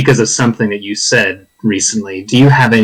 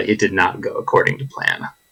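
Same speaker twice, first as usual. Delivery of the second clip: hushed, whispered aside; 2 semitones lower, 7 dB quieter than usual. Game master voicing a character who points to Nomad: whisper. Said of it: "and he whispers".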